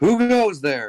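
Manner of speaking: high-pitched, called-out voice. Narrating a scene for the players, a figure calls out into the dark: calling out. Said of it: "I'm just going to call out".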